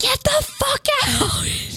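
acted-out scream, very high pitch, very slow, stretched. Retelling catching a man trying to open the window: retelling a scream. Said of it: "I scream".

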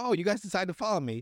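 excited, eager exclamation. Retelling a movie scene where a character spots two others behind him, acting out excitement. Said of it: "He's all excited".

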